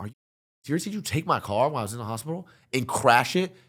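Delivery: acted furious, mad, loud angry screaming. Retelling confronting someone about a scratched car: retelling an angry scream. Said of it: "I'm screaming at Nikon. I'm mad".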